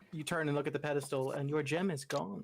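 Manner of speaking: ordinary talk, nothing marked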